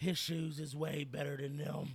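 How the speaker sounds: put-on drunk voice. Retelling what the speaker's partner said to Mike Wallace, imitating a drunk voice. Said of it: "in her best drunk voice and was like".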